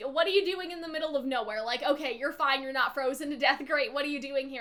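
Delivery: ordinary delivery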